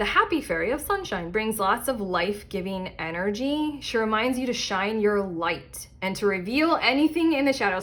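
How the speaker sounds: ordinary talk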